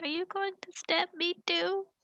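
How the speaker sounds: put-on very soft, quiet, high small kid's voice. Game narrator voicing a kid who backs away from the player, in a very quiet voice. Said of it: "he says in this very quiet voice".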